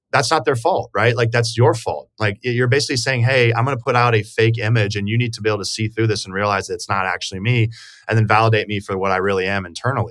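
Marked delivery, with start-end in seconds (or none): none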